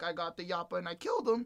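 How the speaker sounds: put-on high, childlike, matter-of-fact kid's voice. Retelling how a performer delivered a line, sounding like a kid. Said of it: "It sounded like a kid was saying that".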